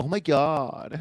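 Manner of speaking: put-on loud, very high cliché Valley girl voice. Showing the voice that California brings to mind, in a cliché Valley girl voice. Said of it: "I think cliche Bay girl. ... that kind of voice".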